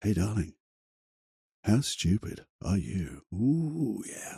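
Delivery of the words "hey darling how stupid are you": low, slow, sultry, seductive voice. Turning harsh self-talk into a sexy voice as a coping trick. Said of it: "change it into a sexy voice".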